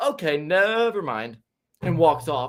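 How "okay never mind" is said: breezy, dismissive, offhand, nonchalant tone. Retelling how a woman dismissed the question: imitating a nonchalant brush-off. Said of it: "with the most nonchalant thing ever".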